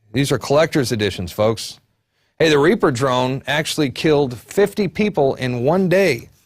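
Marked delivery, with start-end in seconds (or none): none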